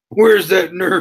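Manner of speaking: put-on loud, high-pitched Texan accent, called out. Imitating a wrestler's Texan accent while recalling a scene: imitating Braun Strowman's Texan accent. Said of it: "he's got the best, like, Texan accent".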